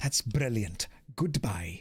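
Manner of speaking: put-on low-pitched, poor Welsh accent. Playing Boone, the speaker replies to Chairman Greta in a Welsh accent. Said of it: "Boone is now officially Welsh".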